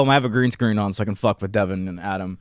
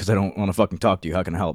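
mock abrasive, curt tone; 2 semitones lower than usual. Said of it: "Why are you so just casual and almost abrasive sounding?".

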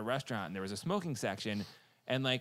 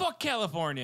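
play-acted angry, dismissive outburst, high-pitched; 6 semitones higher, 4 dB louder than usual. Retelling a movie scene where a smoker answers a waitress: imitating an angry outburst. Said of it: "gets all mad or whatever".

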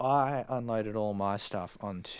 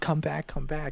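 insistent shouting, as if over a distance; 6 semitones higher, 4 dB louder than usual. Recounting a man yelling at the group from the other side, retelling his yelling. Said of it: "he's sort of just yelling at us".

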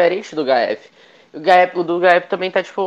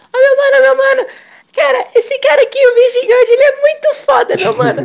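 put-on very high, shrill, loud, annoying, pestering kid voice; 5 dB louder than usual. Imitating an annoying kid who only talks about Virgin God: imitating Shine. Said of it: "Ele fala assim".

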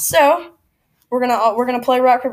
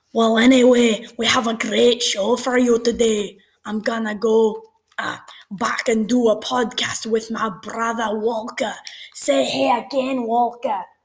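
bad, fake put-on Scottish accent; 4 dB quieter than usual. Opening a podcast with his brother, in a bad Scottish accent. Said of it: "I'm just not good at the Scottish accent".

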